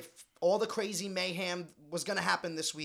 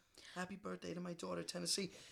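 put-on emotional, choked-up voice, quieter; 11 dB quieter than usual. Retelling a birthday wish said on air: imitating Danny choked up. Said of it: "so choked up and so emotional".

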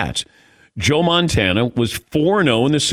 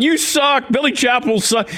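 very high, taunting, jeering yell; 11 semitones higher than usual. Retelling New York extras heckling the actor on set, imitating their yelling. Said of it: "these New Yorkers are yelling out".

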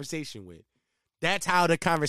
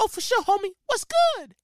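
very high-pitched put-on voice; 4 dB louder than usual. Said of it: "Why is that my [name] voice?".

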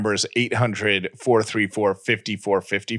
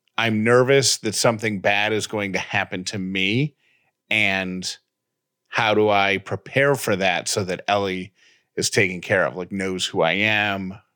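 ordinary talk

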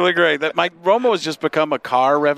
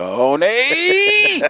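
high, swooping sportscaster voice, words drawn out long; 10 semitones higher than usual. Showing the Nance half of the impression: Jim Nantz impression. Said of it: "all I could really do is go".

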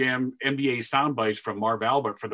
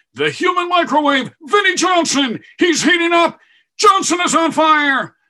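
shrill, booming, swooping, very high, loud, hyped announcer voice; 11 dB louder than usual. Retelling an old basketball game call in Marv Albert style. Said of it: "That was Marv Albert stuff".

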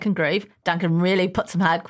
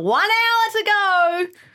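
very high hollering call-out, acted out; 4 dB louder than usual. Describing Mark on the toilet every season, imitating Mark yelling. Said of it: "yelling out".

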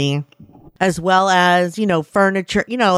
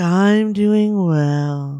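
mock-glum put-on voice. The speaker mimics how Elsie just answered the greeting, imitating Elsie's glum reply. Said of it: "That was so like".

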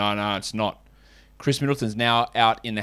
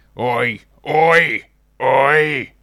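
loud, raised, crackly voice; 6 dB louder than usual. Show host recalls how his voice sounded at the start, crackly Roy Kent voice. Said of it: "I just went all crackly".

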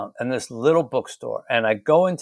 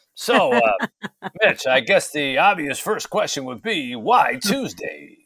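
put-on radio-announcer voice, much higher; 4 semitones higher than usual. Retelling how the host held up his book and asked the first question, imitating a radio voice. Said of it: "that radio voice".

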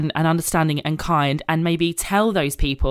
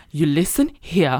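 put-on Georgian accent at a slower pace. Retelling what a woman told her before her wedding, in Nini's Georgian accent. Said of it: "I'm gonna try and do her accent justice".

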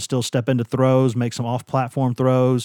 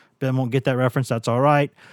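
ordinary talk, nothing marked

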